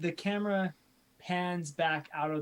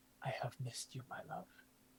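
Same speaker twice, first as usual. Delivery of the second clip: very soft, breathy whisper; 3 semitones lower, 12 dB quieter than usual. Voicing a character who whispers in a sleeper's ear: whispering. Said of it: "she just whispers in your ear".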